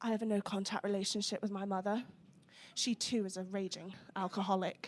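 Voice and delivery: sudden, quiet, hushed and subdued voice. Retelling what a man said to you on a drunken night, suddenly gone quiet. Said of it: "he just suddenly went all quiet and went".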